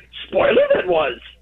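very high character voice, pitched way up. A caller showing how he would phrase it backwards, Yoda voice. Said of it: "I would say".

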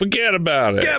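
comic put-on Italian accent. Wrapping up the podcast, the speaker jokes around in a mock italian accent. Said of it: "I'm just making my Italian voices".

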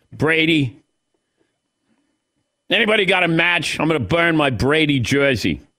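put-on Boston accent. Acting out an angry Patriots fan in Boston: put-on Boston fan accent. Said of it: "I don't even know if that's the accent".

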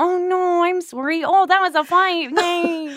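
very high-pitched mocking take-off. Making fun of how the person you are talking to argues, do a mocking imitation of a fellow speaker. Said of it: "making fun of how you're like".

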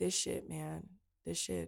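flat, numb tone. Retelling a phone call with dad, imitating someone sounding numb. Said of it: "he just sounded so numb".

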